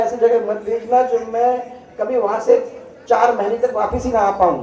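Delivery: normal talking voice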